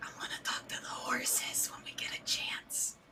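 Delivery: slow, very quiet, barely audible whisper. Whispering to Rusty in character about talking to horses: whispering. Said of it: "I'm gonna, like, whisper to Rusty".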